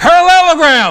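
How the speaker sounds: very high, full-blast booming shout. A storyteller acts out a kindergartner's answer, retelling a loud shout. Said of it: "at volume 9".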